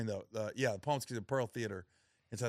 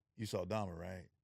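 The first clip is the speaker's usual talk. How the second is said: mock, very calm, cool, unbothered delivery; 2 semitones lower, 3 dB quieter than usual. Retelling what he said to a man in his jail cell, acting real calm. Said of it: "And I was just real calm".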